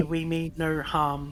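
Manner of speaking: plain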